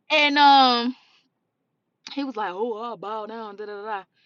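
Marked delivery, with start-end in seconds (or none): 2.5-3.5 put-on mumbling speech with cackling. Speaker recounts what a man said to her: retelling a mumbling cackle. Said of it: "he was mumbling and cackling".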